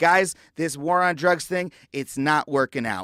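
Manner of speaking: normal talking voice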